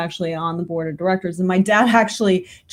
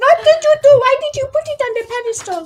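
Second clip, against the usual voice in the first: put-on high-pitched voice with a Turkish accent; 4 dB louder than usual. Retelling what their mother said at a birthday party, imitating mom's turkish accent. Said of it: "Sorry for I'm imitating you, mom, but she still has a Turkish accent".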